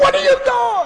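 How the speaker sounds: very high, shrill screaming. Recalling a ball flying over a left fielder's head, retelling own scream. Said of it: "and I'm screaming".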